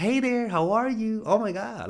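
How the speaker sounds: very high upspeak, lifting at phrase ends. Describing the way some people talk, demonstrating speaking in a high uptone. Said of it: "speaking in an uptone".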